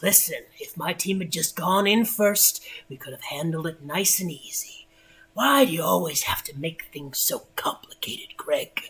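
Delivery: rough-edged, gruff, rough voice. Narrator reading a character's reply to Greg: gruff voice. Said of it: "the gruff voice responds".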